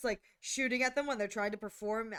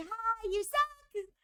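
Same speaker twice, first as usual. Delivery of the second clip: put-on laughing taunting tone, higher; 13 semitones higher than usual. Retelling a game player taunting through Miku, imitating Miku laughing. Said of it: "Miku's just laughing, like".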